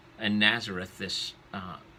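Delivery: plain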